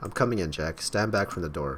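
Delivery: plain reading voice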